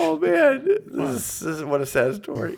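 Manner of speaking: very high, swooping speech through laughter. Speaker reacting to a story in conversation, laughing while speaking. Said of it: "it's like you're laughing when you say that".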